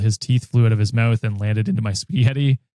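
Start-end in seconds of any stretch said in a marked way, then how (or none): none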